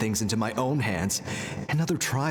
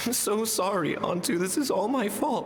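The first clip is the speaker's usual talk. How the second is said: slow, high, tearful speech through crying; 9 semitones higher than usual. Speaking to antu, out on his own: crying while speaking. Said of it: "he's literally crying".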